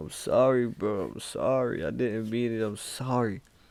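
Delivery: put-on crying voice. Retelling how he kept apologizing to his dog: retelling a tearful apology. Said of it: "My tears is hitting him in the head".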